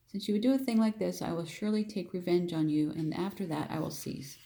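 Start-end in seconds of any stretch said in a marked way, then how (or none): none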